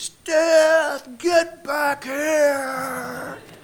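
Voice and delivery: high, loud, slow yell.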